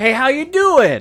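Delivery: put-on Southern accent. Retelling meeting the Colonel as he greets people, in a Colonel Sanders southern accent. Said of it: "He's talking all in a southern accent".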